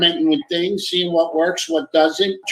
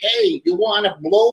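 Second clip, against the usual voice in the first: terrible put-on Rhode Island accent; 2 semitones higher than usual. Imitating the local girls out here: imitating a terrible Rhode Island accent. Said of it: "they got a terrible accent".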